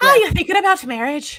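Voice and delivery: put-on loud, very high Irish accent. Repeating the sister's question when asked for it: irish accent. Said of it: "how would an Irish person say it?".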